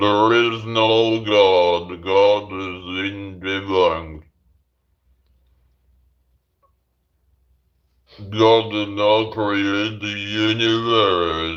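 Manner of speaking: robotic speech-synthesizer voice. Speaker pretending to be Stephen Hawking, in a Stephen Hawking robot voice. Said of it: "like Stephen Hawking".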